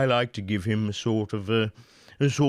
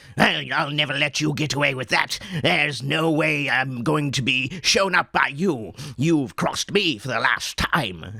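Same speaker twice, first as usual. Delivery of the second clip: throaty, slightly nasal, rapid voice; 2 semitones higher than usual. Voicing what a pictured guy might sound like: throaty, nasal, fast voice. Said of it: "You can hear a lot of my throat in there, a little bit of my nose, uh, sort of speaking very quickly".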